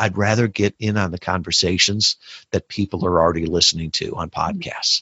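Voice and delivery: ordinary talk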